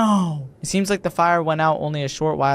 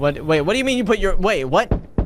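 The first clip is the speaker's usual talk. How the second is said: normal talking voice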